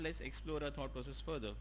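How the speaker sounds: ordinary talk, nothing marked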